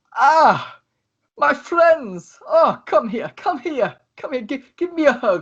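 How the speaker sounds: very high-pitched, teary, overjoyed voice. Voicing Tesla as he sees his friends and starts to tear up: Tesla tearing up with joy. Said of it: "he starts to tear up and goes".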